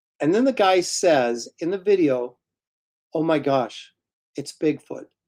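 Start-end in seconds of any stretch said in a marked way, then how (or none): 3.2-5.1 mock bad acting, unconvincing delivery. Quoting the guy in a bigfoot video, imitating a badly delivered line. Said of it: "the delivery is so bad".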